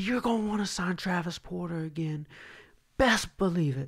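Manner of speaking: heated, defiant, high, angry voice, acted out. Retelling what they screamed when the other side could pull out, retelling a top-of-lungs yell. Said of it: "I'm yelling at the top of my lungs".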